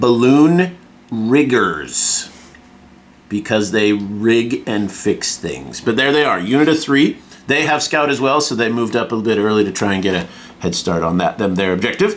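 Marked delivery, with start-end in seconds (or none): 0.0-2.3 very slow, deliberate, every syllable drawn out. Describing the Sky Pirates units, the speaker says this name very slowly. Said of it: "I'm going to say this very slowly".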